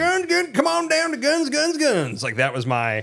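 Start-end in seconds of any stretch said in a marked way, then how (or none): 0.0-2.2 over-the-top, very high, exaggerated rural Southern American accent. Repeating a phrase from something they used to pass: exaggerated redneck voice. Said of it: "I would say it in the most redneck voice".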